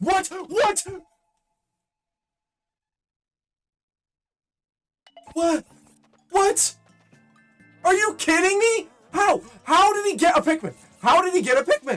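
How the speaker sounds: voice cracking in utter disbelief. Reacting as a Pikmin gets killed by a game bug: voice cracking in utter disbelief. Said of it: "If you couldn't tell by my voice crack".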